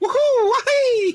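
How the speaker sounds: very high, cartoon-style whoops. Showing how a friend does Mario: Mario voice. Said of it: "He was doing, like".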